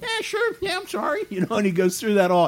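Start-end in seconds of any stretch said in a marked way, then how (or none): 0.0-1.2 very high-pitched, offhand, casual, nonchalant tone. Retelling a gum-chewing guy asked if he's sorry for his sin, imitating a nonchalant reply. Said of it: "there's this nonchalant".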